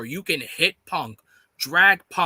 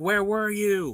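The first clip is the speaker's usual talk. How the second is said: put-on screaming wrestler voice; 3 semitones higher than usual. Acting out a wrestler screaming at another who didn't help: imitating MJF screaming. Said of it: "M J F is probably screaming at him".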